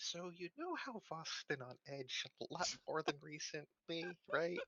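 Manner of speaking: secretive, hushed half-whisper. Playing a character who walks over to Emily: half-whispering in character. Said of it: "I just whisper in her ear".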